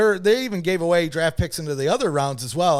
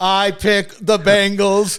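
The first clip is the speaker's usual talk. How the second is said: robotic computer voice, higher and louder; 4 semitones higher, 5 dB louder than usual. Mocking another speaker's pick as an edited video loop: computer voice. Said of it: "just over and over again in computer voice".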